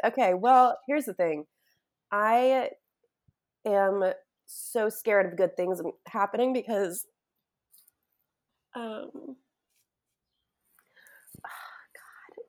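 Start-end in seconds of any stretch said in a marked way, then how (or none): 2.1-12.4 tearful speech, crying while talking. Opening up to a friend about fearing good things: crying while talking. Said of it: "I don't even care if people listen to me cry".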